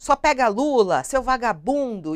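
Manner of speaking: mild shouting.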